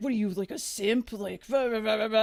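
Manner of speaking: mock heated, angry ranting outburst. Retelling how the player went off on a friend: imitating someone ranting angrily. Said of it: "he just started going off on my friend".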